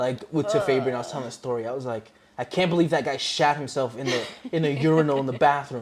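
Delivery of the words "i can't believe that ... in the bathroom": normal talking voice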